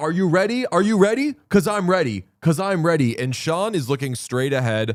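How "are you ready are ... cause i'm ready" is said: high, heckling, jeering yell. Retelling a guy who jumped the suite section: imitating someone yelling. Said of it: "he's yelling at".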